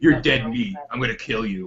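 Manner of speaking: low, stoic, stony mafia-style voice. Acting out a TV scene as Carol: imitating Carol, stoic mafia tone. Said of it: "stoic mafia".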